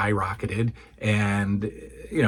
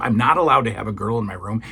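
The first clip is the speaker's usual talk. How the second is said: ordinary talk, nothing marked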